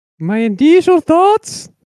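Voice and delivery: put-on Italian-sounding accent. Playing a team GM answering a trade offer: Italian-like accent, high pitched. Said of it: "it's like an Italian accent in there".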